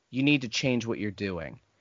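acted, extremely polite, soft, low, sweet tone. Retelling how an old lady spoke to a yelling man, mock-sweet, nicest way ever. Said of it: "in like the nicest way ever was like".

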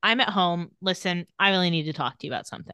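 ordinary delivery

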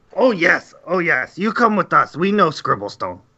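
put-on goblin creature voice with broken speech. A goblin in the tunnels answers an adventurer looking for the scribble stone, goblin voice. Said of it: "you can see 3 goblins in the darkness, / Stone give order to [name]. [name] very angry. He say not enough food. Need more food for Stone. Yes, more food for Stone. More food for [name]. Me am hungry".

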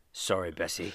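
put-on older English voice. Imagining a groundskeeper sent to deal with a dead cow: old english groundskeeper voice. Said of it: "some fucking old English groundskeeper having to come up and being like".

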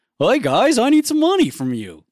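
very high, swooping, ridiculous silly goofy voice. Recalling an impression done earlier, in a goofy, ridiculous voice. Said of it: "he said it in a very goofy, sort of ridiculous voice".

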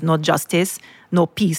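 usual speaking voice

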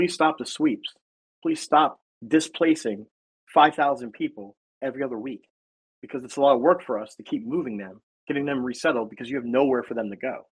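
ordinary delivery

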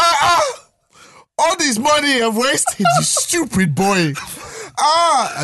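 put-on high tearful crying scream. Retelling a mother's reaction to bad news: imitating mum screaming. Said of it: "My mum was screaming at".

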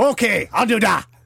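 bad Irish accent, very high and slow. Acting out Connor answering the commission's offer: bad Conor McGregor accent. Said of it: "my shit Conor McGregor accent".

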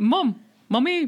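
high little mouse voice. Joking after a squeaky moment, calling out: Stewie voice. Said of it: "It sounded like Stewie".

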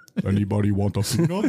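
giant voice impression. Doing a joke impression after a doll line: Andre the Giant impression. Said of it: "That also works as an Andre the Giant impression".

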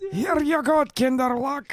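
very high-pitched, slow old cartoon grandpa voice.

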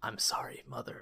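weak, faint, gurgling, dying-sounding whisper. A game master voicing the dying monster to the nearby players, in a faint gargling voice. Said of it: "you can hear a like faint gargling voice that just says".

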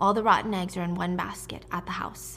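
usual speaking voice

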